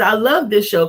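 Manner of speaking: normal talking voice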